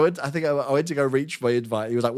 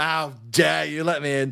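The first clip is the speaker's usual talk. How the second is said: imitated belligerent, combative tone. Retelling being at the door, imitating own belligerent tone. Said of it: "I was being so belligerent at the door".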